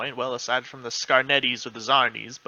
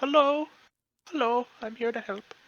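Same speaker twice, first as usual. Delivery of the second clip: put-on higher, elderly halfling woman voice; 11 semitones higher than usual. Voicing a small elderly halfling cook piping up from behind the counter: elderly halfling woman voice. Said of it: "this little half elderly halfling woman, uh, pipes up".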